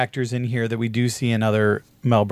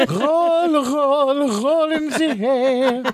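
put-on voice, much higher. Telling a story about a hairdresser, the speaker announces and imitates the hairdresser. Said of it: "I will impersonate the hairdresser".

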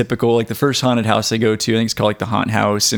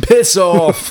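put-on pitched-up British accent; 9 semitones higher, 4 dB louder than usual. Answering an insult jokingly in a put-on british accent. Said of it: "Yeah, he's British".

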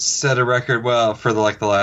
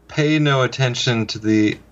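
plain

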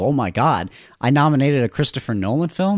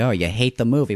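ordinary delivery

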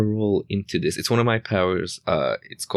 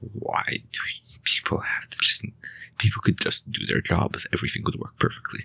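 muttering under breath; 5 dB quieter than usual. Playing a character looking around abandoned stalls, muttering under breath. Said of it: "I might be even muttering under my breath".

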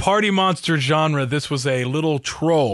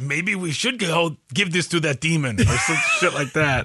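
very bad, clumsy fake Mexican accent; 2 semitones higher than usual. Player voicing a character during a game scene, very bad Mexican impression. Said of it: "I'm kind of talking like this".

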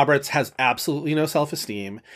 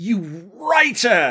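furious, contemptuous, loud, yelled put-down tone; 4 semitones higher than usual. Retelling a film scene where one character yells at another: imitating Clive Owen yelling. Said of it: "he's yelling at Jude Law".

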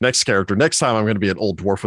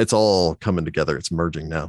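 ordinary delivery

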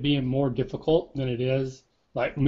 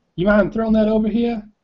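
bad, terrible put-on Southern accent, pitched up; 7 semitones higher, 4 dB louder than usual. Moving into a scene, an actor delivers a line in a terrible country accent. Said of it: "That's my terrible country".

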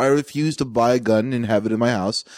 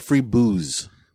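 ordinary talk

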